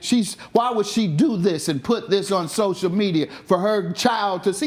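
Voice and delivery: ordinary talk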